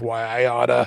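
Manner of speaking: soft, under-the-breath mutter, kept to oneself. Retelling a funny scene, quoting a character, imitating a mutter under breath. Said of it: "she mutters under her breath".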